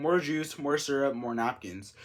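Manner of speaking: normal talking voice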